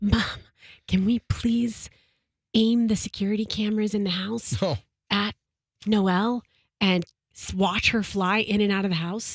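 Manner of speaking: put-on whisper. A mother acts out what her daughter asked her, retelling her daughter's whisper. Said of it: "she whispers it".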